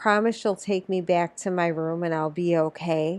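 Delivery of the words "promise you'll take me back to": ordinary delivery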